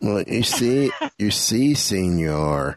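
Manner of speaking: slow, unhurried drawl with "señor" drawn out. Imagining a slow cartoon mouse telling a story: Slowpoke Rodriguez voice. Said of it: "Slowpoke Rodriguez".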